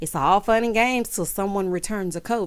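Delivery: ordinary delivery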